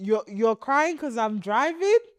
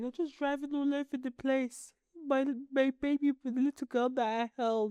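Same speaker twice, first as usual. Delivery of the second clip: mock tearful, sobbing, crying father voice; 2 semitones higher, 7 dB quieter than usual. Retelling what dad said about the driving: imitating dad crying. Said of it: "started crying the other day".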